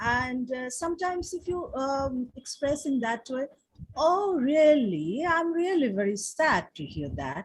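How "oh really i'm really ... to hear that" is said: hollow, sarcastic tone of mock sympathy. Showing how a sympathetic reply can turn into mockery: sarcastic, mocking. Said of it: "you are becoming sarcastic".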